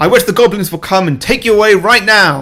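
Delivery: loud, high-pitched screaming.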